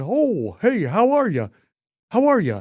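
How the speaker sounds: sing-song, drawn-out, booming puppet voice, high and slow. Guessing which Muppet character is meant: imitating a Muppet character. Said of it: "isn't that the one?".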